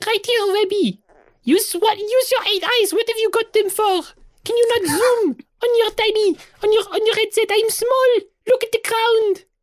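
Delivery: tiny, very high, little creature voice. Voicing a small character calling up from the ground: tiny voice. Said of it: "she hears a tiny voice going".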